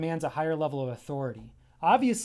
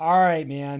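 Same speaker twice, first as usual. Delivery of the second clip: sarcastic, louder, slower; 8 dB louder than usual. Speaker demonstrates their usual reply to a friend, sarcastic. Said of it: "I'm actually very sarcastic. So I'd be like".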